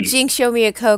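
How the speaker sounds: plain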